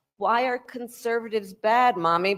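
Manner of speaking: put-on childlike, small little girl voice. Retelling a question asked as a child to her mom: imitating a young girl. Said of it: "she's talking like she's a young girl".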